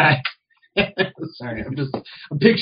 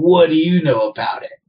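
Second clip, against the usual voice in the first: acted angry, alert and loud voice; 2 semitones higher, 4 dB louder than usual. Retelling how a man turned alert and angry, retelling an angry challenge. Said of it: "very angry kind of look".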